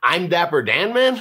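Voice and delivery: final word Man said with rising pitch. Repeating the same line in different deliveries, this time said like a question. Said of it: "I'm going to say it like a question".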